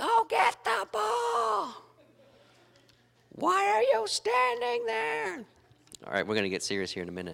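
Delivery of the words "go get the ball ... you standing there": mock rough, creaky, very high, drawn-out scream. Retelling coaching the girls' soccer game yesterday: imitating own screaming. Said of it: "spent screaming".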